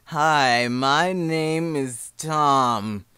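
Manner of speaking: very slow, drawn-out, stretched-out delivery.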